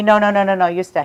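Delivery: ordinary talk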